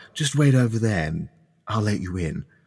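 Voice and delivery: hushed put-on character voice. Voicing Louis thanking the four players for coming: hushed tone. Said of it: "with, like, a hushed tone".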